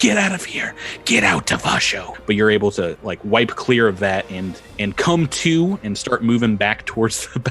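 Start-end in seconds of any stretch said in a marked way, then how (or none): 0.0-2.1 whispered, much higher voice. Narrating a game scene, voicing the character's whispering moat: whispering. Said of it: "your moat that is like whispering".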